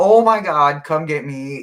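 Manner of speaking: frantic, outraged, loud yelling. Retelling how she got mad after jumping off the couch: imitating screaming. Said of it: "like screaming like somebody killed her".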